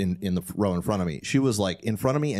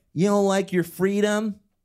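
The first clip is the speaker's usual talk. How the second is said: mock shout, shrill and very high-pitched; 11 semitones higher, 3 dB louder than usual. Retelling what a woman yelled at a man behind them: imitating a woman yelling. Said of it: "she's yelling at him".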